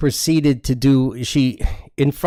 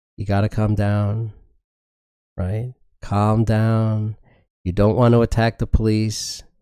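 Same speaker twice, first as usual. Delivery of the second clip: very steady, even tone; 4 semitones lower than usual. Retelling holding a woman back from attacking the police, speaking in a very steady voice. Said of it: "trying to say in a very steady voice".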